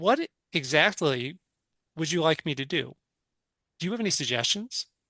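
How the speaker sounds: acted-out sarcastic tone. Retelling what you said to your frustrated inner demon, retelling a sarcastic reply. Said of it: "I got super sarcastic".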